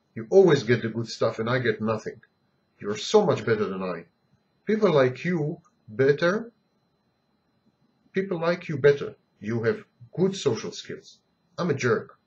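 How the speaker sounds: ordinary talk, nothing marked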